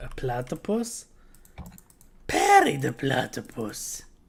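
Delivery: scratchy, slightly raspy, dry-throat voice with swooping pitch. Doing an impression for another speaker: Doofenshmirtz impression. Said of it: "Your impression".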